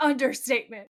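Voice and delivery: all-out, full yelled screaming. Retelling a scene, the speaker acts out Sam answering Dean: retelling Sam's scream. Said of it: "Sam's screaming".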